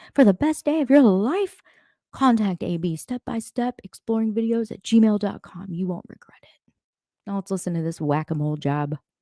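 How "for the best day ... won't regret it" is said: high-pitched radio commercial announcer voice. Speaker doing a mock plug, in a radio commercial announcer voice. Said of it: "Sound like a commercial on the radio".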